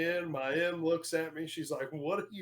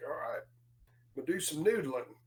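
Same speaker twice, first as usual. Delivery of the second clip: put-on Southern US accent. Retelling what a man said to him, imitating his southern accent. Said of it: "he definitely has a southern accent".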